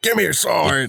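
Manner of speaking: terrible, very high-pitched, badly overdone voice. Speaker does a terrible George C. Scott impression. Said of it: "That was a terrible George C. Scott".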